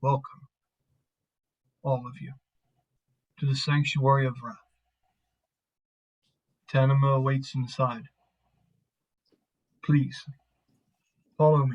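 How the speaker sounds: very deep, low, warm voice. In a roleplay, a figure steps up to address the group, very low, warm voice. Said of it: "he says in a very low and warm voice".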